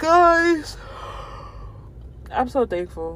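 yawning, drawn-out guys. Speaking to viewers while apologizing for being tired: yawning while talking. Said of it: "I'm so sorry that I'm yawning".

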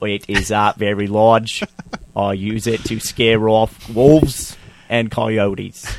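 put-on slight Australian accent, mainly in the vowels. Retelling what a World War I fanatic says, slight Australian accent. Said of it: "I went a little Australian there".

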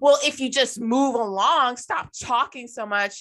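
fed-up, angry shouting. Retelling how a lady in line yelled at a cashier: imitating someone yelling. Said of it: "to the point that she is yelling".

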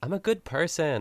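put-on high-pitched, tipsy, drunk-sounding voice. Discussing a show episode, breaking into a Snooki impression. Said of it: "That's my Snooki impression".

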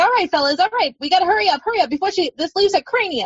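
put-on New York accent. Describing the chipmunk Pip in an animated feature, the speaker quotes him: Pip's New York accent. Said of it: "he's got kind of this New York accent".

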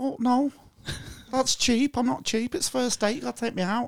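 high-pitched, strongly pushed Scouse accent.

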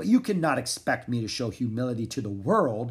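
plain

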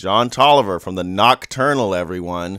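play-acted, very loud, sneering, mocking delivery. Retelling how someone announced him as he was leaving: imitating a mocking introduction. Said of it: "like, mockingly?".

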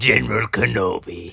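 rough, creaky put-on character voice. Made to do the voice, answering Hello there: General Grievous voice. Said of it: "then you make me do the voice, and then the first thing after I do my best impersonation".

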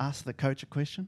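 ordinary delivery

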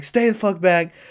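raw screamed delivery. Describing an actor's movie scene, acting out his line while retelling a scream. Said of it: "he's just screaming at him".

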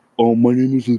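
own everyday low voice. Speaker recalls how they sounded fresh from school, imitating own low voice. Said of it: "he told Kaylee that my voice was so low".

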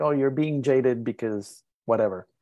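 ordinary talk

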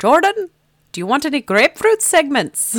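very high, very loud Scottish lilt. Speaker thanks Doris and mimics her waking him early: Doris impression, accidentally Scottish. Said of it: "that sounded more Scottish than anything else".

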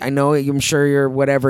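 ordinary delivery

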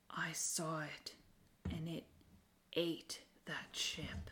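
grave, solemn, slow, barely voiced whisper. Game narrator voicing Nyssa answering another character: Nyssa whispering. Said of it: "she whispers".

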